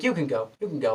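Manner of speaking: gentle, soft, really nice kind murmur. Retelling a Joker scene, quoting the dwarf at the door: imitating a soft, kind voice. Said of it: "really kind, like, really softly, really nicely".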